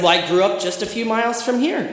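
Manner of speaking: high-pitched, snarky, smirking tone. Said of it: "I was feeling snarky that day".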